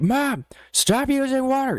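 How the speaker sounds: mock, very high-pitched shout. Retelling calling to mom from the shower: retelling own yell.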